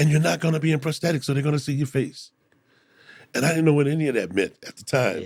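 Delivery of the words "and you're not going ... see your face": high, eager squealing scream. Recounting what she screamed while explaining the Guardians role, retelling a scream. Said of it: "She was screaming".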